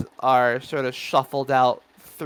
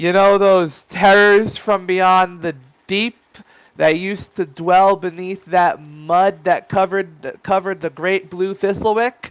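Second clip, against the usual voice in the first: shouting announcer voice, higher and louder; 6 semitones higher, 6 dB louder than usual. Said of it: "the announcer laughs and yells".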